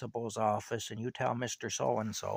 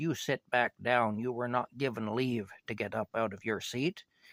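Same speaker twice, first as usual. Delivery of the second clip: ordinary delivery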